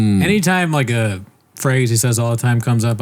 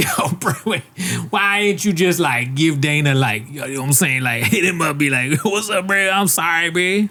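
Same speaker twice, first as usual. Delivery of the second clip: put-on old man voice, bro-style slang; 6 semitones higher than usual. Imagining a seventy-year-old with the same personality, voicing him in youth slang. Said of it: "Can you imagine a seventy-year-old who's just like".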